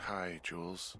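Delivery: tired, weary voice. Woken at night to answer a radio call: tired voice. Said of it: "you sound tired".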